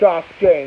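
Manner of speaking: ordinary talk, nothing marked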